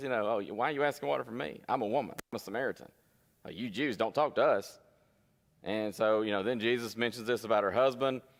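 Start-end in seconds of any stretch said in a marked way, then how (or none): 0.3-4.8 put-on snippy tone. Acting out the Samaritan woman's reply: mock-snippy. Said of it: "being a little bit snippy".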